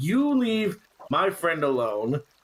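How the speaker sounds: pointed, in-your-face confrontational tone, right up close. Voicing a character who gets in an enemy's face: in-character confrontational warning. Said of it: "get right in his face and, like, point at him".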